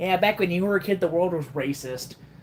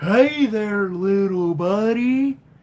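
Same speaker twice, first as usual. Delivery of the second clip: big, oversized cartoon cat character voice; 2 semitones higher than usual. Showing off voice impressions, the speaker does a Big the Cat voice. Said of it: "I could also do a really good big voice".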